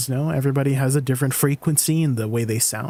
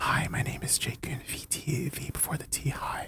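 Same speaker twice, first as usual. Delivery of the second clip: very soft, slow ASMR whisper; 11 dB quieter than usual. Suggesting sending them asmr, the speaker demonstrates the whisper: asmr whisper. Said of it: "the whisper is like".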